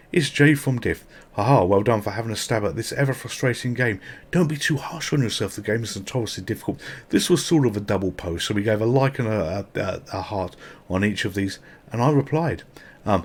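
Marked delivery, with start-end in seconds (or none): none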